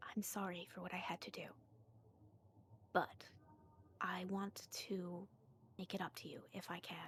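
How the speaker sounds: near-whisper in very low, hushed tones. A narrator voices a woman speaking to the blind one, very low tones. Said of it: "she's saying this in like very low tones".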